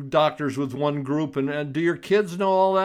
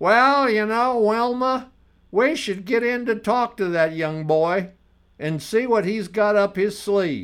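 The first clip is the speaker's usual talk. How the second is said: pitched-up Southern American accent, played for fun; 5 semitones higher than usual. On the radio, speaker voices imagined listeners just for fun, in a southern accent. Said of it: "it sounded like I was coming from somewhere in the South".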